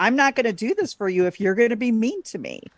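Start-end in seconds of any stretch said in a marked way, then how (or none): none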